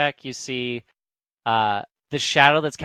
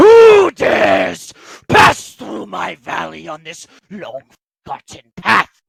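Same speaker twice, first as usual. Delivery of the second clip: very loud, thundering, booming, swooping voice; 6 semitones higher, 11 dB louder than usual. Game master voicing an unseen speaker as the players start to run, loud booming voice. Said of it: "you just hear this loud booming voice".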